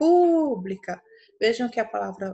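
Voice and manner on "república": stressed, stretched pu in república. Teaching how to find the stressed syllable, stretched stressed syllable pu in república. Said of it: "a sílaba pu é a que se estende".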